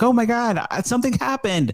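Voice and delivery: frantic, very high freaking-out panic. Retelling a movie scene where a character panics: imitating someone freaking out. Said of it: "And Tom starts freaking out".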